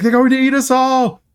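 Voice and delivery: very high, frantic, panicked scream. Recapping a scene where a rat emerges from a mouth, imitating Myrna screaming. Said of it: "screaming that".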